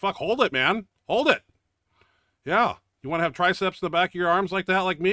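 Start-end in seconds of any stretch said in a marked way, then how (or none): 0.0-1.4 loud, hollered, yelled urging. Over footage of a tricep kickback, the speaker is retelling a yell at them. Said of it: "I'm yelling at them right there".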